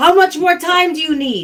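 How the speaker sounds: loud, high-pitched character yell. Playing Kendall calling out to someone through smoke: character yelling. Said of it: "Kendall's going to yell".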